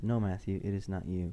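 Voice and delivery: ordinary talk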